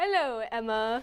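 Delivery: put-on robot voice with British accent. Asked what the robot Frank sounds like, imitating him in his British accent. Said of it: "He has a British accent".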